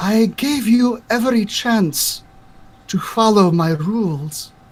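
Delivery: echoing disembodied voice. Voicing a voice echoing through the forest trees: echoing voice on the wind. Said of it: "a voice is almost carried on the wind".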